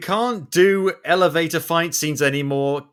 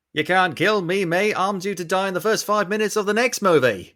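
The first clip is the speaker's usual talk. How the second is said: terrible, clumsy, badly done put-on Australian accent; 3 semitones higher than usual. Riffing on a movie scene: terrible australian accent. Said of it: "my terrible Australian accent".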